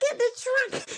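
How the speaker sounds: acted, very high-pitched, mild yell. Retelling her yelling at him to get in the trunk: imitating someone yelling. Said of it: "she's yelling because he didn't have nowhere to sit".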